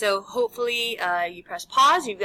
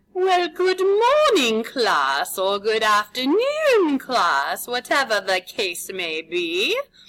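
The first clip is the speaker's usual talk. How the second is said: made-up put-on accent, swooping and sing-song; 3 dB louder than usual. Greeting a class at the start of a lesson; unidentified put-on accent. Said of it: "I have no idea what accent this is".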